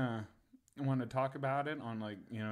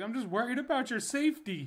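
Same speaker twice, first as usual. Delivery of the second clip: put-on very high, raised pleading, on the verge of tears; 11 semitones higher, 5 dB louder than usual. Retelling what she said while almost in tears: imitating someone almost in tears. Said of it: "she's almost in tears".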